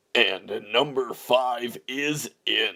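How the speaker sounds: slow mock announcer voice.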